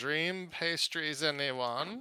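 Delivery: put-on high elderly woman's voice. Voicing an old woman selling pastries in the street: old woman's voice. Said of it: "knocking and saying".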